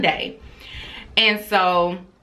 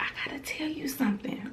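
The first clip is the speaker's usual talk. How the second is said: high, fast whisper. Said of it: "why are you whispering".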